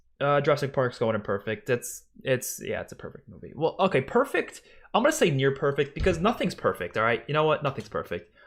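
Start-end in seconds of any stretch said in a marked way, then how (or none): none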